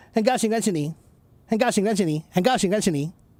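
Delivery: very quick, rushed, rapid-fire speech. Showing how tones get lost at speed, said very fast. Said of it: "That's too fast".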